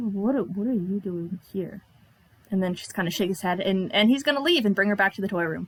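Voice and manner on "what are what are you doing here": soft, slow mumbling half to oneself. Voicing a character who finds someone where they shouldn't be: muttering. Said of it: "he's muttering".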